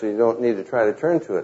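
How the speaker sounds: rushed, very fast talking. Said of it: "and I'm talking too fast".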